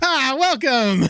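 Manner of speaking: very high voice, playing a character. Retelling a clip where a character is voiced like Claptrap: imitating Claptrap voice. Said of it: "he's literally just playing, like, Claptrap".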